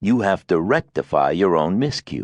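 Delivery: ordinary delivery, nothing marked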